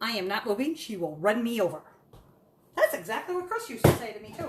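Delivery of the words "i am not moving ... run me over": voice of a dog. Voicing the dog, who sleeps by the stove: voicing the sleeping dog. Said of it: "He's like".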